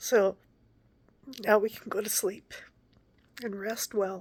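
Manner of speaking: crying, voice breaking. After saying a bedtime prayer aloud, speaking to listeners while crying. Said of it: "I'm sorry I'm crying".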